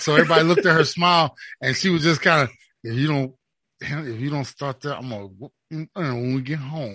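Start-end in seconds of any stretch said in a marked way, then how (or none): 2.8-7.0 soft, hushed, menacing tone. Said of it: "reach down and quietly smile".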